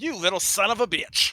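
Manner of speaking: furious, loud, shrill skeleton character voice. Speaker voices a skeleton cursing at another character, angry skeleton voice. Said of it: "doots angrily".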